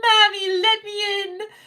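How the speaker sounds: put-on play-acted sobbing child pleading, very high, slow, drawn out. Retelling a small child banging on a door: imitating a crying child. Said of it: "banging on the glass door and crying".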